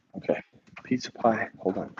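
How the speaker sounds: hushed whispering voice. Arriving home where a baby might be asleep, whispering. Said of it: "I'm whispering because we have a baby".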